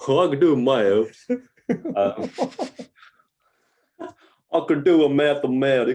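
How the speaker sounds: very loud, high, put-on backwoods Southern accent. After praise for the speaker's maths, answering in a Deliverance impersonation. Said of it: "was that your Deliverance impersonation?".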